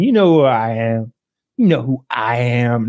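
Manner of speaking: drawn-out, entitled, trashy celebrity voice. Retelling a traffic stop, imitating a trashy celebrity. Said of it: "being that trashy celebrity that you can imagine".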